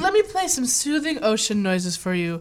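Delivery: sing-song, swooping cartoon character voice. Quoting a line while suggesting sounds: quoting The Simpsons. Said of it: "Like from The Simpsons, he's like".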